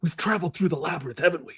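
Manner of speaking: put-on intense actor voice. Reading the outro as a cohost requested: stereotypical Nick Cage impression. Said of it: "the traditional sort of stereotypical Nick Cage impression".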